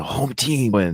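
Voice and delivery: imitated whisper. Retelling a film character's line while commenting: imitating a whisper. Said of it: "And he's whispering".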